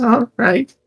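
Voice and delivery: very high, beaten-down, cowed goblin voice. Voicing a defeated goblin agreeing to lead the way: very cowed goblin. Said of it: "very, very, like, cowed".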